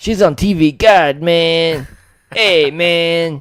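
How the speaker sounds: booming, loud, high, put-on Mexican accent. Mimicking how a man sounded when talking, in a put-on Mexican voice. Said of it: "That's my Mexican voice".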